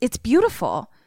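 put-on fretful, agitated little-kid tone. Retelling Sadie's reply to a quiet group, imitating her like an agitated child. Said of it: "she says it in a way of like an agitated child".

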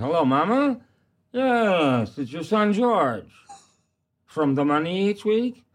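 high drawn-out yes. Retelling an act where Georgie Jessel phones his mother: imitating Georgie Jessel. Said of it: "an act where he's talking to his mother".

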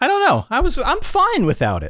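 voice rising way up. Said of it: "the pitch of your voice getting higher".

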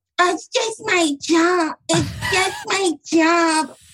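innocent-sounding, blameless act, slow, high, drawn out. Mocking someone who wants to act blameless: imitating Helena. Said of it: "that was an accurate impression".

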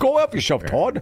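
Minnesota-style accent. Trying out a line in a Minnesota accent. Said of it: "that's more Minnesota".

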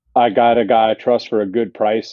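ordinary talk, nothing marked

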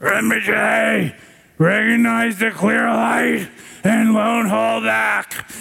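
gruff, high, rough hollering shout. Retelling one Rinpoche shouting at another, imitating Chatral Rinpoche's gruff shout. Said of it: "in his gruff Tibetan voice shouting".

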